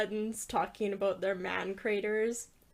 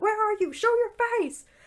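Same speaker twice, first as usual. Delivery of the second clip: put-on screaming, higher and louder; 13 semitones higher, 7 dB louder than usual. Retelling how Ryan ran into each room at the ghosts: imitating Ryan screaming. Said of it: "screaming and yelling at them".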